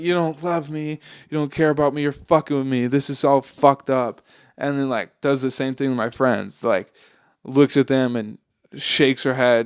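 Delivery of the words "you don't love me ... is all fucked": put-on crying, tearful delivery. Retelling an ex accusing the speaker: imitating someone crying. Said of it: "they're looking at me crying".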